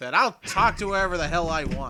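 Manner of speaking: very loud, furious, angry shouting. Describing a man arguing with guards, acting out his retort: acting out a loud argument. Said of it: "having a very loud argument with guards".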